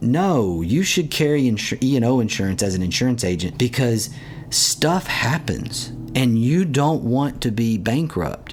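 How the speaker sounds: ordinary delivery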